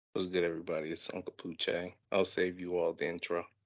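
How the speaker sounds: quiet, flat, low-energy delivery. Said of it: "I need some more energy".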